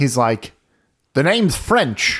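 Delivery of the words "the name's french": put-on high old-timer American accent. Retelling a character's line: old American accent. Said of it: "in the most, like, American, like, old person accent".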